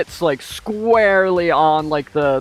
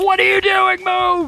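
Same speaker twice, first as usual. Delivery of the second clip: very high, urgent, shouted delivery. Voicing a gunner yelling at the driver during a chase: gunner shouting. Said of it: "the gunner shouts".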